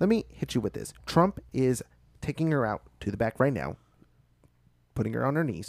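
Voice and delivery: fast, smug debater voice.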